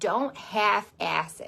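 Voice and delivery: Michigan-accented delivery. Speaking to a live audience, in a Michigan accent. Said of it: "That was my Michigan accent".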